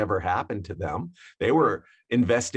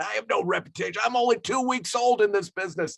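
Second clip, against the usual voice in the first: play-acted, very high, shrill, furious yelling; 11 semitones higher than usual. Retelling yelling at a caller who was badgering about adding a record: retelling yelling at someone. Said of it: "I started yelling at him".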